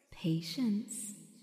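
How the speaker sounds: hushed, close whispered murmur. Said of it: "she murmured in his shaggy ear".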